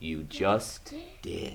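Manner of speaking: very quiet, low, slow, hushed, drawn-out donkey voice. Narrator reading a story, the donkey answering the two mice, low, slow donkey voice. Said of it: "said the donkey in his low, slow voice".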